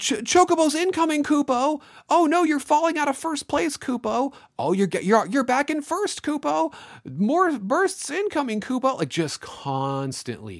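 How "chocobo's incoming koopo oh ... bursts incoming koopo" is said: put-on screaming voice, much higher, louder. Speaker complains about the Moogle that never stops, imitating the screaming Moogle. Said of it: "he just screams at you constantly".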